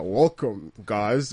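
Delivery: seductive, sexy radio host voice. Imitating how Wizard usually opens the show: sexy voice. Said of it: "with his sexy voice".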